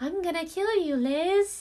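very high, very slow, drawn-out talking toy voice. Retelling hearing a toy speak at night, imitating a Furby voice. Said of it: "I hear my Furby going".

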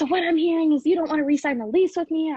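high loud scream. Retelling a roommate's reply during a lease talk: imitating a roommate screaming. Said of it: "she literally started screaming at me".

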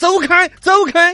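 loud shout. Recounting someone blocking his car as he drove home, retelling a loud shout. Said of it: "我大声的说".

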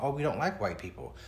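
ordinary talk

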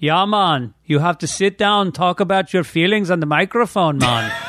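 put-on Caribbean accent throughout. Imagining what those guys would say about talking on the microphone, put-on caribbean accent. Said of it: "Did you take a class in a Caribbean accent?".

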